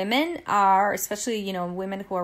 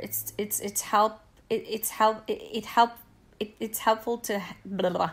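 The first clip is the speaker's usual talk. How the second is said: stuttering, stammering over words. Explaining what the flotation tank is for, the speaker is stammering. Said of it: "I'm stammering".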